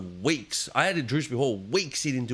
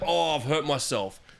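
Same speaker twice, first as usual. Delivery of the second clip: put-on, slow, pained whimper of fake hurt. Retelling how a player lay on the ground: imitating a player faking injury. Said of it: "Trying to feign, feign injury".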